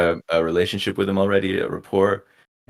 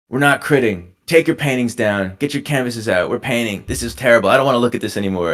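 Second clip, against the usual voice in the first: put-on angry, furious ranting voice, higher pitch; 4 semitones higher than usual. Retelling a professor's reaction to a painting critique: imitating an angry professor. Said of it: "And he was mad".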